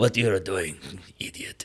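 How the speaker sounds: put-on Eastern European accent, slow and deep. Imitating a tough businessman father scolding his son: eastern european accent. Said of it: "he's like an Eastern European guy".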